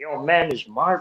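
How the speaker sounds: put-on very slow, drawn-out young Toronto accent. Retelling how young kids talk: imitating young kids' Toronto accent. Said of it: "I don't know what the Toronto accent".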